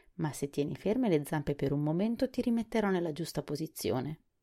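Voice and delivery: ordinary talk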